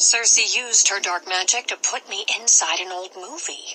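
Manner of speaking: ordinary delivery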